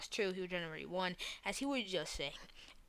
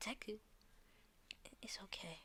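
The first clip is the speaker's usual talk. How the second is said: put-on sobbing, quieter; 2 semitones higher, 16 dB quieter than usual. Telling a story and voicing a character's line: acted crying. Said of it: "As she's completely crying".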